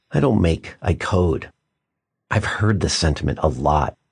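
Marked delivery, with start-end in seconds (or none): 0.2-1.5 put-on sadness, much lower and slower. Quoting a young man who came up at the Maker Faire, retelling a sad remark. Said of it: "said kind of sadly".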